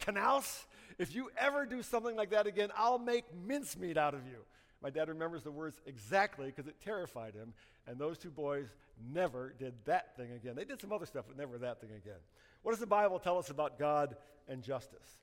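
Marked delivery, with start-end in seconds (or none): 0.0-4.4 play-acted loud, high, stern, threatening shout. Retelling how someone grabbed a boy by the collar; retelling a loud outburst. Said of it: "said in a loud voice".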